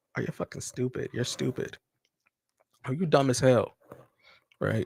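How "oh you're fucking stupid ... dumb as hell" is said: mock muttering in an undertone, under the breath. Acting out people who insult you, imitating a muttered undertone. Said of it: "they'll say it in an undertone".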